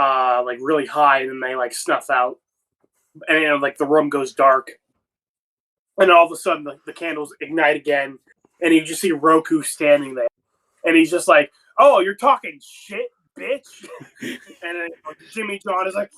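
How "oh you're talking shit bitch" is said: angry, jeering, taunting tone, pitched up. Telling a story where Roku appears as the candles relight, acting out his mock-angry taunt. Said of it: "he just like gets pissed off".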